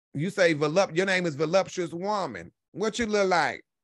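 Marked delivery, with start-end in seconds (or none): none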